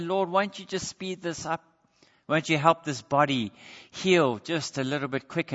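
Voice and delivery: plain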